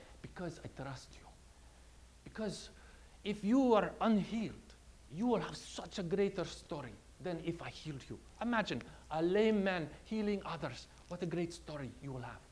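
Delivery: put-on soft, lightly done, slight Middle Eastern accent. Retelling how Jesus answers someone who has not been healed, in a somewhat Middle Eastern accent. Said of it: "in his somewhat Middle Eastern, I guess, accent".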